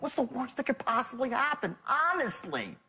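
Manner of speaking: earnest, pleading, begging tone. Showing someone how their tone comes across, mock-pleading tone. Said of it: "But your tone is".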